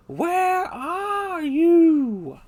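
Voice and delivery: very high, very loud, shrill call with stretched you. The speaker tries a voice they expected to struggle with: a Dory impression. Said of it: "not a good imitation at all".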